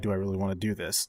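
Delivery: normal talking voice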